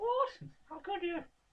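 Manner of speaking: very high, slow, goofy drawn-out voice. Reacting to being singled out to talk more, in a silly voice. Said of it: "Don't talk in a silly voice".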